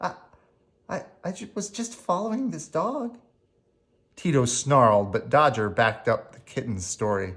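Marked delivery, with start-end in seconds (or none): 0.0-3.2 trembling, very high, shaky, hushed little voice. Narrator reading a frightened kitten's words to the surrounding gang of dogs, shaky voice. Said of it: "He said in a shaky voice".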